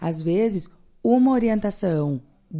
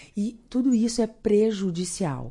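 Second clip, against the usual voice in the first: plain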